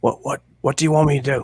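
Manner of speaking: whispering in put-on voice. Speaking in character to Castor while sneaking: whispering in character. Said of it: "I whisper to".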